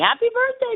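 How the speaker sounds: very high, chirpy, sing-song delivery.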